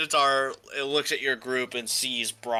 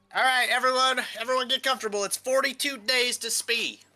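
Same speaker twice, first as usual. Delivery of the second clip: very high-pitched voice with a southern drawl; 12 semitones higher than usual. Voicing Biffers as he addresses everyone: Biffers with a southern accent. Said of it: "Why has he got a southern accent now?".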